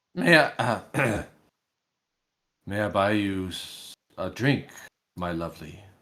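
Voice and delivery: slow, halting, broken nervous voice that cracks. Voicing a flustered half-elf offering to buy a drink: broken voice, cracking. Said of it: "in kind of a broken, almost like his voice cracks".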